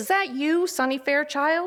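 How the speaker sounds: high-pitched, nasal voice, called out. Narrator reads a deputy calling across the grass to a kid, in a high nasal voice. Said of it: "he calls in his high nasal voice".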